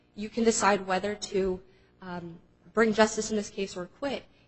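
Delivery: plain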